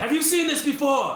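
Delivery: yelling up, shouting upward. Calling up to companions above while stuck below: yelling up. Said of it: "I'm gonna yell up".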